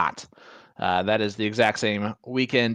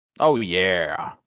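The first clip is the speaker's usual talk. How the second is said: deep oh yeah, with yeah held long; 4 semitones lower than usual. Commentating a darts match between throws; Kool-Aid Man "Oh yeah". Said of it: "your best impersonation of the Kool-Aid Man".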